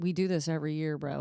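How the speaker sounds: mock snide, offhand, snarky, dismissive tone. Retelling a snarky comment made to a cop: imitating own snarky comment. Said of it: "a snarky comment where I was like".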